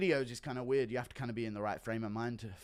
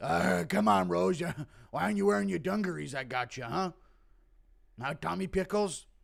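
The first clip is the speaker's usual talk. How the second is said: rough, high, raised voice, pushed up; 6 semitones higher, 5 dB louder than usual. Acting out someone mistaking one person for Rose, Pat Barry impression. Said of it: "Impression of Pat Barry mistaking Kai Kara France for Rose".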